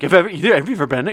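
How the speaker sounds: mock excited tone. Mimicking another speaker's tone back at them: imitating an excited question. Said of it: "Your tone was like".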